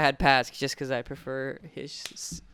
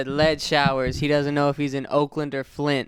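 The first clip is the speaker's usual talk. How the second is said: ordinary delivery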